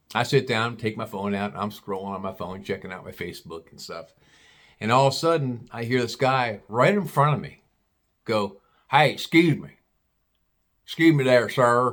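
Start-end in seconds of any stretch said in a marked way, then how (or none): 8.9-11.9 put-on backwoods hillbilly Kentucky accent, called out. Retelling a guy sitting across from him calling for his attention, hillbilly accent. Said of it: "That's how he's talking, like a hillbilly".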